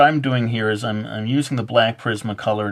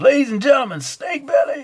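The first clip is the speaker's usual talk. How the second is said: very high, stage-show style rock announcer voice. Joking that a drawing term sounds like a band name: rock band announcer voice. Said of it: "Sounds like a rock and roll band".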